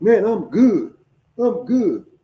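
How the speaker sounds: put-on drunk voice. Telling a story, quoting a man in his drunk voice: imitating a drunk voice. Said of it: "he's saying in that motherfucking drunk voice".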